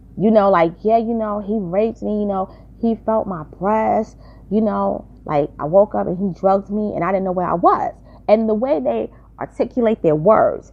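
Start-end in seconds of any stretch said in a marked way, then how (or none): none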